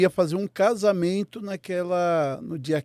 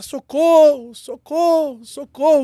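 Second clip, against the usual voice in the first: loud, high, urgent shouting; 9 semitones higher, 7 dB louder than usual. Retelling a fall as a companion started shouting: imitating someone shouting for help. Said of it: "o meu companheiro começou a gritar".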